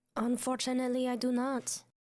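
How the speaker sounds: slow, deliberate put-on French accent. Answering another character who asks what that creature was: french accent. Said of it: "Forgot you were doing a French accent".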